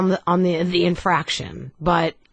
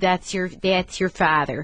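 put-on Minnesota-sounding accent. Recounting what their mother said, quoting her words: imitating mother's accent. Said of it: "that's how she talks too".

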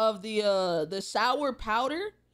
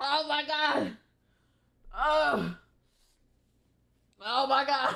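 winded, breathless from laughing. Recovering after laughing hard with friends, breathless from laughing. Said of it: "I can't breathe".

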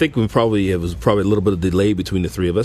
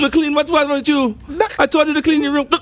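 Jamaican accent with the voice very high. Joking about a name, acting out a scolding in a jamaican accent. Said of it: "say it with a Jamaican accent".

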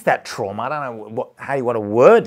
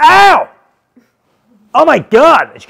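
shrill, very loud, slow, drawn-out pained shriek; 11 dB louder than usual. Retelling how a woman in an elevator screamed: imitating a woman screaming. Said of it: "she screams out".

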